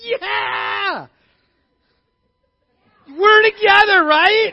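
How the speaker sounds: high, loud cheering shout.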